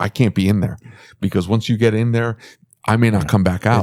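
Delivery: ordinary talk, nothing marked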